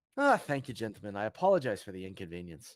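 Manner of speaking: as charming as possible, laying on charm. Speaking in character to guards after being let through: as charming as possible. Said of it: "trying to be as charming as I can".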